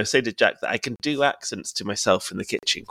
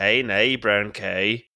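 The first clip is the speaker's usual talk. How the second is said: very slow, dragged-out Northern Irish accent. Asked for a sentence an Irish person might say: Northern Irish accent. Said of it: "That's a bit Northern Irish".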